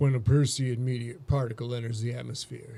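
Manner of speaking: low, sultry, seductive put-on sexy voice. Reading a passage about perseid meteors aloud, in a put-on sexy voice. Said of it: "We're going to do this in a sexy voice".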